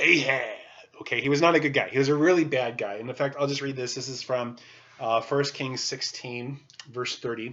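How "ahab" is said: strange, weird silly voice, louder. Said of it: "Everyone say Ahab in a really weird voice".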